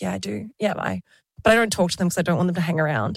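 put-on deadpan delivery. Retelling a woman's answer to everyone in the office, retelling a deadpan reply. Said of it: "she was full deadpan".

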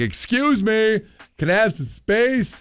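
very loud, very high-pitched, slow, projecting voice. Showing what to say when a possible pickpocket gets too close: very loud voice. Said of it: "In a very loud voice".

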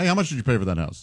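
ordinary talk

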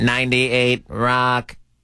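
mock robotic voice. On air before going to the phones, saying the station name: robot voice. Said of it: "That was me doing a robot voice".

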